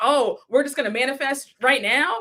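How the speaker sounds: mock, fake surprised tone. Retelling scolding a friend, quoting their words: mocking someone's surprised tone. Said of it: "Why are you acting so surprised saying".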